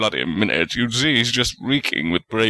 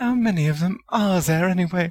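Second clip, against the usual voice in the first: muttering, pitched very high; 9 semitones higher than usual. Seeing another child from the same family, someone in the group mutters. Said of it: "and a muttered".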